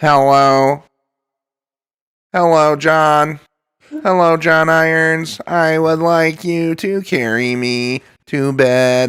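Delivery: very slow, flat robot voice. Joking that a movie character lacks Stephen Hawking's voice: Stephen Hawking robot voice. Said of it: "She doesn't have robot voice".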